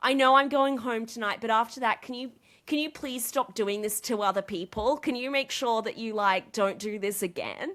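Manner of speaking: put-on sobbing, tearful, begging voice. Recounting a man begging other people to stop; imitating someone sobbing. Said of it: "literally sobbing, hyperventilating. He's begging people".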